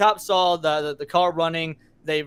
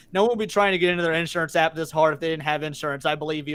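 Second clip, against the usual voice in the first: ordinary talk, nothing marked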